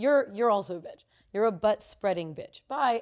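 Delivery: normal talking voice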